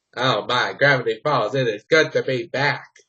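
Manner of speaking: put-on cartoon character voice. Speaker demonstrating one of their character voices; high-pitched Bill Cipher voice. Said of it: "I do like a high pitched Bill Cipher voice".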